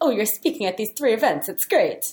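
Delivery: Italian accent, slightly high pitch. Reacting to a guest's speaking events, sounding Italian. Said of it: "I sounded Italian right there".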